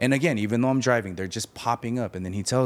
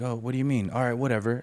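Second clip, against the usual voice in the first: put-on voice, angry and annoyed; 3 semitones higher than usual. Retelling the father's reply after being cancelled on: imitating dad getting mad. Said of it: "He got kinda mad, right?".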